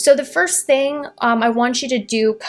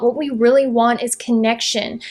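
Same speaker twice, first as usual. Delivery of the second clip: usual speaking voice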